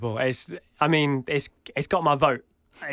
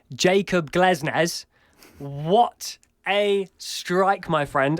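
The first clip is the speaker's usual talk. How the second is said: put-on British accent, trying its best; 3 semitones higher than usual. Discussing the goal of the month competition, speaker switches to best British accent. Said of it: "I will say this in my best British accent".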